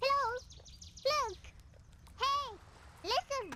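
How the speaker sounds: high-pitched, whispered little calls. Trying a voice after being asked to read in it: high-pitched Navi voice. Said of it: "I can't do that high-pitched".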